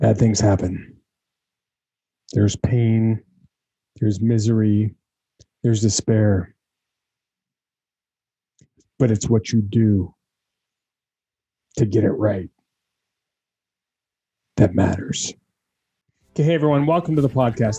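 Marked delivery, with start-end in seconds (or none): 0.0-15.3 put-on intense motivational speaker voice. Opening the podcast with an impersonation: Jocko Willink impersonation. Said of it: "That was my best Jocko Willink impersonation".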